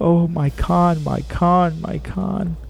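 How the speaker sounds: very slow, drawn-out, high mumbling. Reading a story: a woman puts on the halo and mumbles to herself, mumbling. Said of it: "she mumbled".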